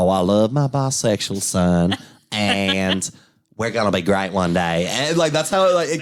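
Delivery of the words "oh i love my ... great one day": thick, exaggerated southern drawl, slow. Describing how a sketch came across, the speaker mimics its president, over-the-top SNL southern accent. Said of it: "someone on Saturday Night Live doing a southern".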